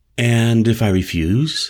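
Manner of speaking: plain reading voice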